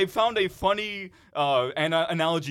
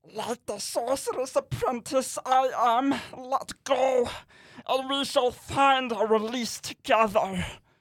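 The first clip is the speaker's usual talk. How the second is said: high, creature-like reading voice; 7 semitones higher than usual. Reading item number 17 aloud, in a Gollum voice. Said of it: "Read by Gollum from Lord of the Rings".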